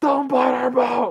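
put-on shrill, high-pitched, loud kid's scream. Retelling how the kid in the video reacted: imitating a kid screaming. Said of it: "he just starts screaming".

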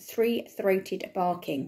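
ordinary delivery, nothing marked

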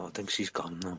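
very quiet whisper. Speaker on a call with another person, in a very quiet whisper. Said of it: "You said that in a very quiet whisper".

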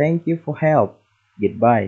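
ordinary delivery

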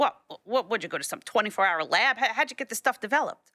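very gruff impression. Retelling a photo editor's questions about the photos, imitating a very gruff editor. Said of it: "very gruff".

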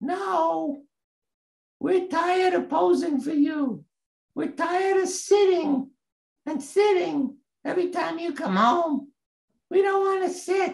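tiny squeak, very high, stretched "no". Retelling the little voice that answered from the house, little squeaky voice. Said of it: "I heard this little squeaky voice".

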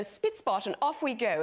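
prim, proper, put-on English nanny voice. Retelling being asked to do the Mary Poppins voice, Mary Poppins voice. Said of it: "do your Mary Poppins voice".

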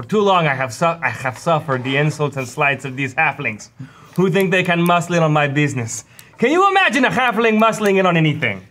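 angry, pissed-off put-on voice, rising. Voicing Pablo as he declares all-out war on the halfling cartel; angry Pablo voice. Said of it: "You sound different".

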